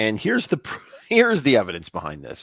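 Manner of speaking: talking through laughter with swooping pitch. Introducing the evidence behind a theory, laughing while talking. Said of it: "I'm sorry for laughing".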